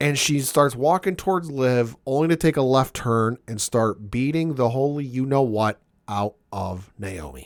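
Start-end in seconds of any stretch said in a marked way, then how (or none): none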